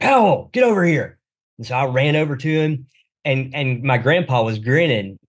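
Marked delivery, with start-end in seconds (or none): 0.0-1.2 high yell called across a distance. Recalling baseball practice, quoting the coach calling him over; imitating a coach yelling. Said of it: "he yells out".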